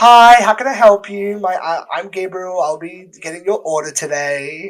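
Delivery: high, unhurried, put-on customer-service voice. Retelling greeting a customer, in a high-pitched customer service voice. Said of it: "I know what you mean by the high pitch".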